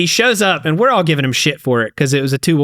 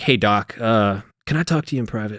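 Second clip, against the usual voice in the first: put-on embarrassed voice, lower and quieter; 4 semitones lower, 6 dB quieter than usual. Retelling how an embarrassed recruit asked the corpsman for privacy: imitating an embarrassed recruit. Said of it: "he's super embarrassed and he's like".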